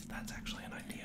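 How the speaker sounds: quiet whispered voice.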